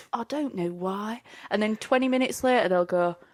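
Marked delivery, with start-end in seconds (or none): 0.1-1.2 slow, lost, baffled, bewildered puzzlement. Imitating a passenger stuck on a stopped train: imitating a confused passenger. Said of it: "You'll be sat there confused, like headless chicken".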